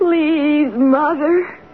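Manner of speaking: ghostly pleading voice, slow, drawn-out, begging cry. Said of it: "pleading voice".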